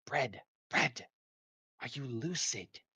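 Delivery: words pushed out in a hiss. Narrating a scene, the speaker voices a character addressing another, hissing. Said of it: "she's going to just kind of hiss".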